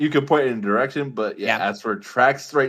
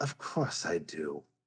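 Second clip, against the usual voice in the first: very quiet, very low, hushed, wary cynical murmur; 7 semitones lower, 13 dB quieter than usual. Voicing the being asked whether it understands: cynical, cautious accent. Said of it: "cynical, cautious accent you have ever heard".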